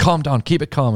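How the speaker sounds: mock forced calm-down reassurance, rattled nerves showing. Imitating a goalkeeper telling his teammates to calm down: imitating a rattled player feigning calm. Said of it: "sort of getting his defenders".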